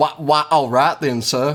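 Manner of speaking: put-on Southern US drawl. Trying the line again after being told it doesn't work: Daniel Craig southern drawl. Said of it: "Try it again".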